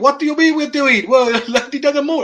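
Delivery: failed put-on Indian accent, very high, loud, shrill. Acting out India space people answering a caller: bad put-on Indian accent. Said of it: "I can't even do an Indian accent".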